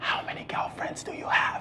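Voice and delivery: very quiet, hushed whisper. Describing anxiety symptoms, the speaker repeats what she asked him: hushed tone. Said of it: "in a very hushed tone".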